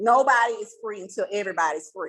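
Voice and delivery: ordinary talk, nothing marked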